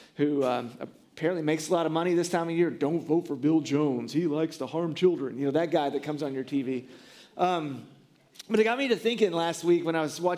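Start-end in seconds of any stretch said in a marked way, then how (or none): 2.7-5.4 menacing, scary, deep announcer voice. Imitating the guy who comes on your tv, in a scary deep voice. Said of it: "you get that scary deep voice guy".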